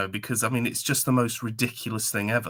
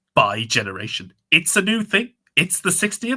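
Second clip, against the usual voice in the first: high, swooping put-on voice; 7 semitones higher, 4 dB louder than usual. Urged by the other speaker to do his voice, an imitation of another person's voice. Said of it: "Do it in his voice".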